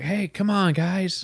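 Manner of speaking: slow, mellow, gentle, reassuring pleading voice. Retelling a friend's impression: compassionate, mellow Joe Biden impression. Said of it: "I do the compassionate, mellow Biden".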